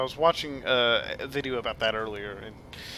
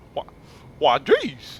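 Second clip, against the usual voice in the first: loud, silly, goofy cartoon character voice; 2 semitones higher, 7 dB louder than usual. Trying out voices to practice: Goofy voice. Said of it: "I gotta work on that".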